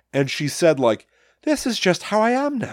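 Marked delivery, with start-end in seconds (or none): 1.4-2.7 put-on Irish accent, higher pitch. Retelling what Mom said when playing with a new voice: imitating Mom's Irish accent. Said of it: "she started speaking with an Irish accent".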